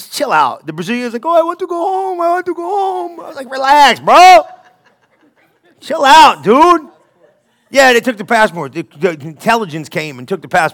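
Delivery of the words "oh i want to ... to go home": play-acted weepy, whiny sob voice, high. Telling a story, the speaker quotes the Brazilian, retelling someone crying. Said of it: "The Brazilian was crying".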